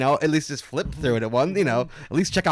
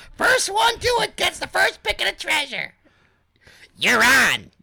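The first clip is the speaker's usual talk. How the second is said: put-on girl voice, higher. Reading a story aloud, voicing the older sister Dina: Dina girl voice. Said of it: "I'll do Dina".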